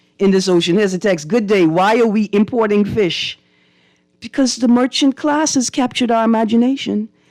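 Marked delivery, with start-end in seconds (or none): none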